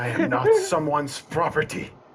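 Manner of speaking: furious, high voice breaking into an inhuman crack. A narrator voices the queen's angry retort, angry, voice cracking inhumanly. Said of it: "her voice cracks for a second and like it's not human, it's more angerish".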